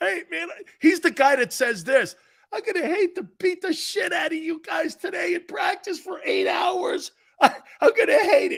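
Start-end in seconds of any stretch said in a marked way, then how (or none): 2.5-8.6 weepy, teary-eyed, high tough coach voice. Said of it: "has a whip and tears".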